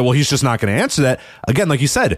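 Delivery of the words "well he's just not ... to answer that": plain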